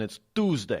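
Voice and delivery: fake, very badly done Brooklyn accent. Reading out the call-in number, the speaker says the day in a very bad brooklyn accent. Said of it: "that's my very bad Brooklyn accent there".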